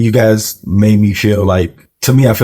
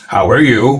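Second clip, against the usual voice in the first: serious, firm, stern voice; 2 semitones higher than usual. Imitating the other host's greeting back: imitating a firm, stern voice. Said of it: "It wasn't like, "Hey, how are you?"".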